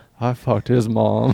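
muttering quietly under his breath. Retelling what a man at a party said to himself, muttered under his breath. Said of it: "to himself under his breath".

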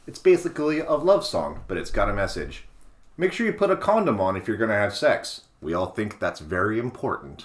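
ordinary delivery

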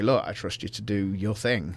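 ordinary talk

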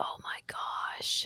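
soft, hushed whisper.

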